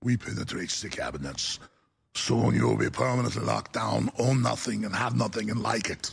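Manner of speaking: put-on very low-pitched German death-lord accent. After joking the accent shift is hard, doing Schwab in a German death lord accent. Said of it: "to a German death lord accent. But I'll try".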